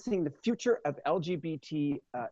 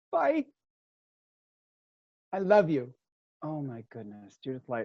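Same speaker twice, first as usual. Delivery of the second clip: crying, tearful and emotional, with swooping pitch; 3 semitones lower than usual. Saying goodbye to a friend and colleague after thanking her, crying. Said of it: "my eyelashes are coming off now because I'm crying".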